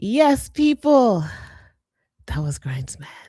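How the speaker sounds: winded, catching breath. Signing off and naming who that was, out of breath. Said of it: "let me catch my breath".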